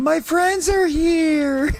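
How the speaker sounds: very high, slow, stretched-out battle yell. Quoting a character's line when she's on your team: imitating Squirrel Girl yelling. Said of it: "She just drops a".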